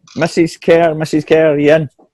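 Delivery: very slow, high, drawn-out calling shout. Knocking at the door with Winston and calling for Mrs. Kerr, shouting. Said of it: "we start shouting".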